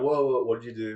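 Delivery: aloof, standoffish, sarcastic jab. Retelling what the new cashier says to the bloodied customer: imitating a sarcastic standoffish cashier. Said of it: "he's equally, like, sarcastic and standoffish".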